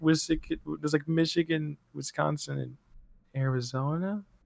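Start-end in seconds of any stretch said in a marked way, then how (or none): 1.1-4.2 put-on weak, unsure, unconfident voice, much quieter. Replaying their own earlier unsure answer, mimicking own weak, unsure voice. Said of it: "as weak as my voice has ever been".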